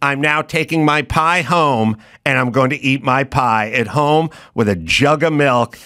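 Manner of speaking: plain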